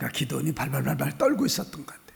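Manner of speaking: trembling, soft, fast whisper.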